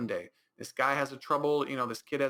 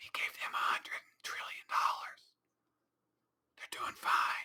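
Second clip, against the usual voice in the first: soft, breathy, barely voiced whisper. Retelling a weird moment while talking like Joe Biden, whispering Joe Biden impression. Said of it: "when he whispered".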